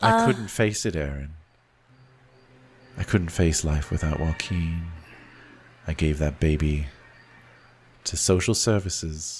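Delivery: put-on sad, childlike voice. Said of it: "He's got that sad kid face".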